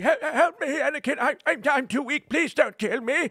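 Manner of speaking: slow, drawn-out begging, pitched way up. Retelling a movie scene, acting out the character's plea: imitating Palpatine pleading. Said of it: "with Palpatine, and then he's like".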